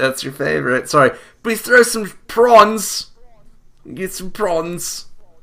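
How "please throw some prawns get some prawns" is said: British accent, put-on, pitched very high. Doing an aussie bit, the speaker slips into a british accent. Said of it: "why did we get British?".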